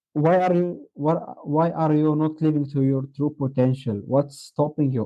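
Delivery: normal talking voice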